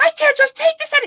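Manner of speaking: shrieky outburst, very high and very loud. Speaker retelling getting agitated as their sister tried to calm them, high shrieky voice. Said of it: "that high streak cheeky shrieky".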